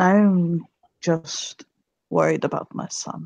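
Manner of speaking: softly spoken. A father answers the stranger staring at him: softly spoken. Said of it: "He'll say softly".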